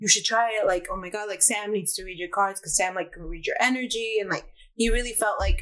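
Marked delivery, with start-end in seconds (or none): none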